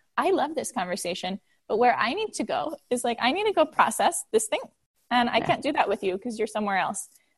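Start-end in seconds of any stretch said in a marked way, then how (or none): none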